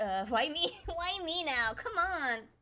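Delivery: loud, very slow, every word stretched out. Imitating a game character's reaction, mock protesting as Kaeya. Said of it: "He's like".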